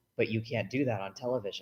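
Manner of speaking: play-acted, bone-dry, low, flat deadpan delivery. Retelling the physicist dad's reply to excited kids: imitating a deadpan delivery. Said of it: "he would always look at us deadpan and go".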